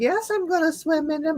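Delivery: put-on slight Belgian accent, pitched very high. Recalling being eight, speaker quotes her in her little Belgian accent. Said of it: "in her little Belgian accent".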